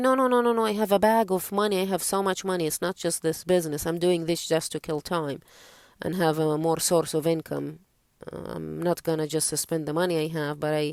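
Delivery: ordinary talk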